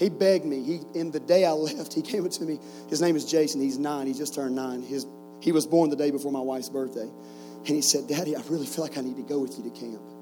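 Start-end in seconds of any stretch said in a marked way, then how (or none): 8.1-10.0 put-on teary child voice. A father retells what his nine-year-old son said to him, retelling it teared up. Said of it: "all teared up".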